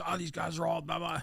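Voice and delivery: mock sergeant major voice, high and barking. Retelling how the sergeant major barked at the returning engineers: imitating someone barking. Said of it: "He's just barking".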